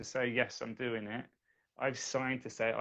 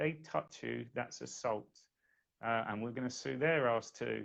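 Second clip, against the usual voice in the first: ordinary talk, nothing marked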